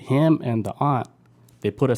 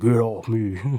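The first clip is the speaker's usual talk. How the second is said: dropped, deep-register, deep commanding voice. Retelling what the woman said while being dragged: imitating a deep voice. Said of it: "She had a deep voice".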